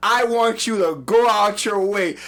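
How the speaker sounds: ordinary delivery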